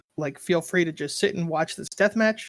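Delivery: ordinary talk, nothing marked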